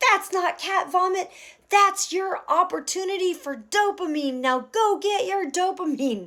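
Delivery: mock very high-pitched shout. Retelling yelling back from the yard: imitating own past yell. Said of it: "and I yelled back".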